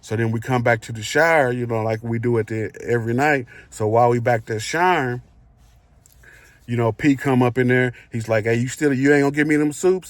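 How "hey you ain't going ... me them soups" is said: mock menacing, aggressive, threatening and confrontational tone. Telling a story about a shower confrontation, retelling a man's aggressive demand. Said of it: "He said it like in an aggressive way".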